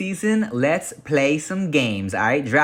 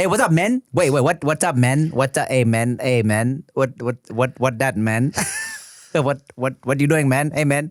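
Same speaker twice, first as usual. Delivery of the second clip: imitated Vietnamese accent. Asked to talk in a Vietnamese accent, mimicking friends who do one. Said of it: "mimic other homies who I know who do Vietnamese accents".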